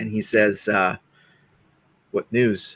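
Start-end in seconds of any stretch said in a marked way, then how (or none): 2.1-2.8 deeply grave, mournful, very somber and solemn tone. Voicing an NPC greeting a distraught party back at the tavern: very somber voice. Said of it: "Obviously very somberly".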